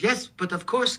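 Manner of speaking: put-on offhand French accent. Retelling how Cyril answered if he'd ever held a gun, imitating Cyril's French accent. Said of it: "in his French accent".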